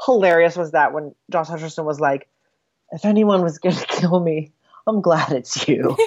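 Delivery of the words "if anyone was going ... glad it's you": put-on breathy, dreamy voice. Retelling a movie line from the Josh Hutcherson character: imitating a breathy, dreamy voice. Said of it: "he says it in this, like, breathy, dreamy voice".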